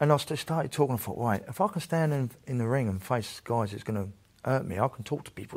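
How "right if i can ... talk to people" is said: ordinary delivery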